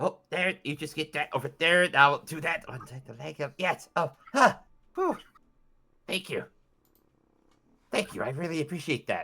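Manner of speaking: rasping, raspy wooden-puppet voice. A game master voices a skeleton marionette being untangled: raspy marionette voice. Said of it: "a raspy voice says".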